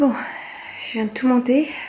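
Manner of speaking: out of breath. Having just carried all the Christmas decoration boxes up, out of breath. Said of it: "Je suis essoufflée".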